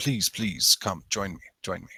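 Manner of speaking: put-on gruff, thick, laid-on German accent. Describing how Lazarus greets a priest: Lazarus's gruff German accent. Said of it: "he says it in a very gruff, thick German accent".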